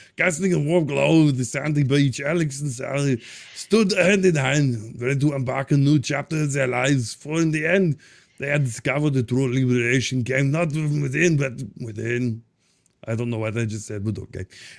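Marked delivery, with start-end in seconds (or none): 0.2-12.4 put-on Austrian accent. Reading a story aloud to the group in a put-on Austrian accent. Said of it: "so I might as well go Austrian".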